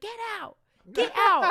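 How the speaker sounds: acted very loud, very high, shrill furious shout. Retelling how a woman chased a bear from her kitchen: imitating someone angrily yelling. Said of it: "she was angry about it".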